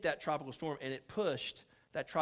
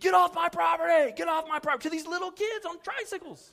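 very loud, repeated screaming; 9 dB louder than usual. Retelling a neighbor yelling at little kids on tricycles: imitating someone screaming. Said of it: "start screaming".

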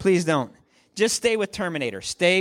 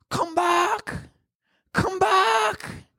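bad, very high, drawn-out calling out; 13 semitones higher than usual. Quoting a key line from a movie, a terrible Rose impression. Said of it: "that was terrible, Rose".

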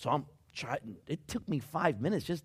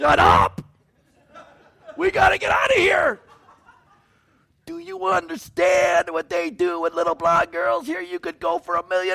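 very high-pitched, loud, urgent shout; 12 dB louder than usual. Retelling urging the group praying with Pastor Tom to leave, re-enacting yelling. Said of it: "And I'm like yelling at them".

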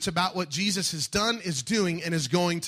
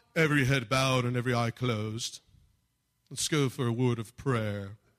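put-on British accent, preacher-like delivery; 6 semitones lower than usual. Acting out an imagined preacher's altar call, put-on British accent. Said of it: "how'd I do with my British accent".

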